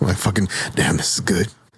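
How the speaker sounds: hushed whispered delivery. Suggesting a line for a library scene, whispered. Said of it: "You got to whisper it".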